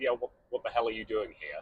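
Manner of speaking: play-acted, fast, muttered, affronted, rude, insulted tone. Retelling what a man said when they were still in the room, mimicking an insulted tone. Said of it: "in a very like insulted tone of voice basically said".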